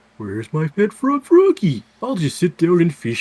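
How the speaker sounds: annoying, booming, loud sing-song cartoon voice with swoops. Recapping a game's stages, speaker does an annoying Big the Cat voice. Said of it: "that annoying voice I just did".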